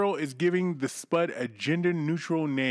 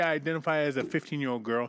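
plain

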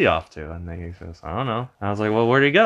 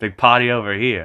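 ordinary talk

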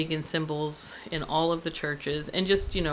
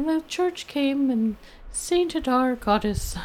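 put-on very high, sweet little old Irish lady voice; 10 semitones higher, 5 dB louder than usual. Quoting an old lady she follows on YouTube, in a sweet little Irish lady voice. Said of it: "in her sweet little Irish lady voice".

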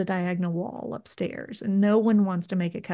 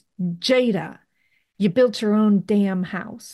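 mock big booming voice, slow and drawn out; 4 dB louder than usual. Recalling hearing Drew call out from the kitchen across the house, Drew's booming voice. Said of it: "in like this booming voice".

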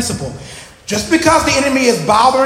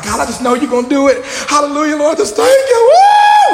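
high, swooping, revved-up, enthusiastic voice; 5 semitones higher, 4 dB louder than usual. Describing how people start off praying, speaker is acting fired up. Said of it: "at first you start off on fire, like".

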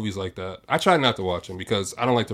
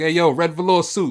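loud, high catcalling holler; 7 semitones higher, 6 dB louder than usual. Imitating a friend who calls women by what they wear: Jock's catcalling voice. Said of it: "He'll be like".

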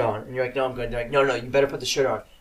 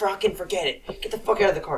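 play-acted furious, fed-up, pitched-up angry shout; 7 semitones higher than usual. Retelling how the dad reacted after the car wheel hit a root, imitating angry dad. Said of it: "because he was pissed".

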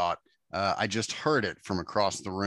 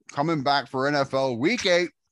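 raised, higher-pitched talk with mouth half full; 6 semitones higher, 5 dB louder than usual. Host eating baklava during the ad read, talking with a partially full mouth. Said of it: "With a partially full mouth".

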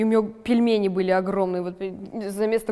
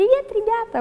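affected, very high, put-on vlogger persona voice; 14 semitones higher, 3 dB louder than usual. Describing an old invented persona, imitating her own put-on blogger persona. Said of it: "какой-то наигранной Марьяны, которая взяла образ".

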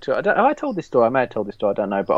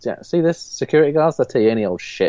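ordinary talk

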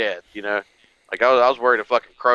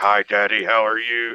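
put-on demonic baby voice, slow and drawn out. Retelling a nightmare about a baby possessed by a demon: imitating a demon-possessed baby. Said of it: "she was possessed by a fucking demon".

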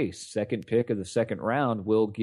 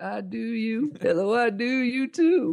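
very high, very slow, drawn-out delivery; 13 semitones higher than usual. Imitating Bill Clinton pointing at people in the crowd: Bill Clinton impression. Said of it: "he'd be like".

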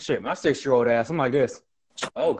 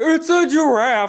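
very high, loud, belted cartoon voice; 12 semitones higher, 7 dB louder than usual. Asked to do cartoon voices for viewers, the speaker does a Patrick voice. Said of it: "Could do Patrick".

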